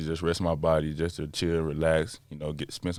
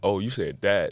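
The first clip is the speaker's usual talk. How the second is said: ordinary talk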